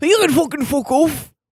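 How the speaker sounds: put-on faint Scottish accent. Playing the person who opens the door, telling the visitors off, slight Scottish accent. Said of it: "why are you kind of Scottish?".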